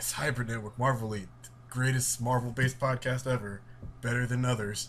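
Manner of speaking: usual speaking voice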